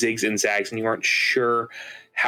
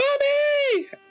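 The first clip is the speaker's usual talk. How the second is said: put-on higher-pitched child scream in fright. Voicing a small child who spots a sewer monster: child screaming in fright. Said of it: "a small child sees you and just screams".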